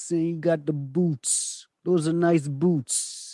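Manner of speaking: put-on Brooklyn accent. Trying out accents in conversation, the speaker does a brooklyn accent. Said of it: "I'm just trying to do the Brooklyn accent".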